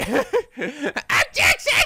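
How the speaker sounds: very high, screechy, whiny voice. Describing voicing a video game character, doing a screechy Winston Payne objection. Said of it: "make your objection sound nice and screechy".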